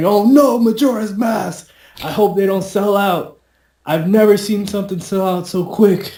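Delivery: very high, twitchy, anxious, panicked yell. Recalling a twitchy man after the same item: imitating an anxious yell. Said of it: "he yelled out".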